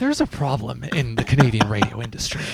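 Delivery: mock breathless podcast delivery. Joking with the other speaker, trying out a breathless podcast voice. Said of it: "I gotta work on my breathless podcast voice".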